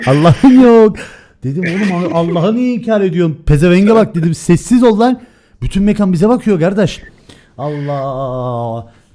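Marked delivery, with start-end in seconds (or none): 0.1-1.0 loud, high, put-on local street dialect. Retelling a story, repeating someone's words: imitated dialect. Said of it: "Yefite ediyorum sana bak bu ağızla".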